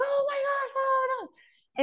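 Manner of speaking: very high-pitched squealing scream.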